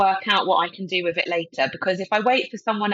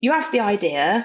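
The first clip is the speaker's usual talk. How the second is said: heavy, really strong cockney London accent. Speaker talking about working in broadcast television, in a really cockney accent. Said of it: "sounded really cockney then".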